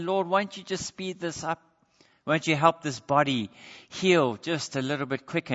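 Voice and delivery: ordinary talk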